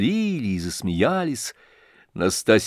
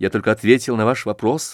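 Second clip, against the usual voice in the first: plain reading voice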